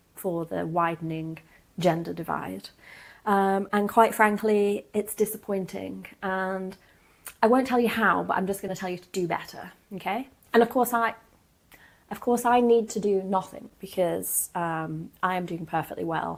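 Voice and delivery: plain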